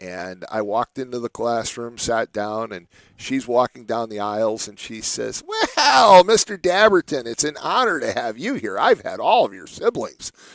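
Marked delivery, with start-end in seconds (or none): 5.5-10.3 high-pitched, nasal schoolteacher voice. Retelling what an English teacher said on the first day: imitating a teacher's nasal voice. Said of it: "she had kind of this nasally voice".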